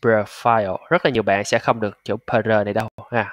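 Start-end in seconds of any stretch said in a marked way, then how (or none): 0.0-0.8 profile with the stress moved onto the second syllable -file. Vietnamese english pronunciation lesson: stress on second syllable of profile. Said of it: "Nhấn âm số 2".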